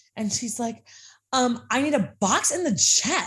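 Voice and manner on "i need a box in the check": put-on, loud, pitched-up voice with total attitude. Retelling a customer's request: imitating a customer's attitude. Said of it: "has this total attitude with me".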